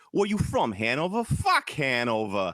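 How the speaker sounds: very bad put-on Boston accent, slow and swooping. Retelling people asking where someone is from, in a wicked bad accent. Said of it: "It's a wicked bad accent. Yeah, exactly like that".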